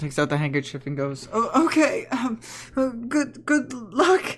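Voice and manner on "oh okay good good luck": very high, slow, drawn-out, choked-up tearful crying. Voicing the wife as the group leaves: choked up, crying voice. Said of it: "choked up, crying in her voice".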